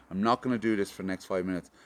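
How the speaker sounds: usual speaking voice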